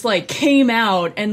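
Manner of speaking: ordinary talk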